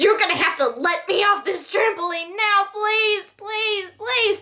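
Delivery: mock frantic, panicked pleading tone, very high. Retelling begging to be let off a trampoline: imitating own panicked pleading. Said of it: "I lose my cool and I start panicking".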